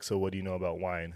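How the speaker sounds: normal talking voice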